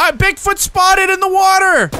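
urgent, high-pitched yell.

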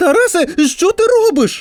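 high, crying-out exclamation. Reading a sister calling to her little brother in the sandbox, exclaiming. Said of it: "вигукнула сестра".

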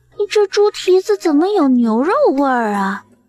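amazed, astonished, high-pitched, slightly tipsy wonder. Narrator reads a diner's line after chewing a bite at the table, astonished. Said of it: "惊诧道".

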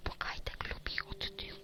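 soft, unvoiced teasing whisper.

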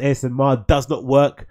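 normal talking voice

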